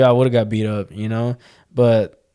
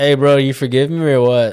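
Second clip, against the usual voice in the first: put-on, teasing, tongue-in-cheek sarcastic tone; 2 semitones higher, 3 dB louder than usual. Retelling a remark to an angry opponent after a game: retelling a sarcastic remark.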